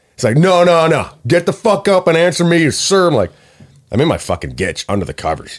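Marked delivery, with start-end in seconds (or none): 0.4-3.1 put-on abusive screaming, high and slow. Retelling how a drunk man screamed at someone in bed: imitating a drunk man screaming. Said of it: "I can't sleep while he's screaming".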